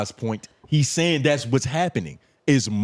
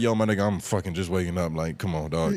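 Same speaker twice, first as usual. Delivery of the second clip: put-on brush-off tone, lower and quieter; 7 semitones lower, 5 dB quieter than usual. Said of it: "I gave him the energy of".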